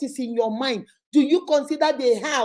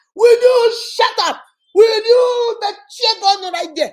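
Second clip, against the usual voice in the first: unhinged, very high, loud screaming; 9 semitones higher, 7 dB louder than usual. Showing how some people yell and call it communication: demonstrating screaming. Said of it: "You're screaming like you lost your mind".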